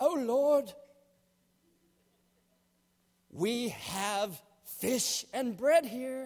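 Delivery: put-on slow, stately, grand British accent. Retelling a story, voicing Philip in a British accent like important movie people. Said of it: "in a British accent, as all important people do in movies".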